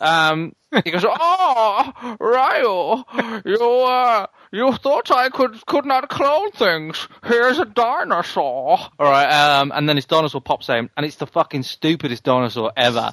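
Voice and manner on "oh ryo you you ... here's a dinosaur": villain voice, very high, very slow, stretched oh. Retelling a masked English villain's line in a game: Bane voice. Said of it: "I don't know why he sounds like Bane".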